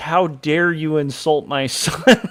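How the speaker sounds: put-on furious, outraged, indignant father voice. Retelling a dream where a father takes offense: imitating a livid father. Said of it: "really upset, like, really, like, livid".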